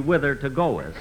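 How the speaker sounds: normal talking voice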